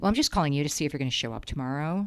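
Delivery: mock harsh, hostile, immature-sounding, antagonistic tone. Retelling a phone call from a receptionist: imitating an antagonistic, harsh tone. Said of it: "it was very antagonistic and very harsh".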